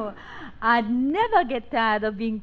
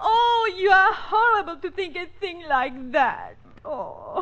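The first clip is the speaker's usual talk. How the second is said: high-pitched, weeping, tearful voice; 7 semitones higher than usual. A lady suspected of being the thief protests to the monsieur, crying. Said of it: "don't cry".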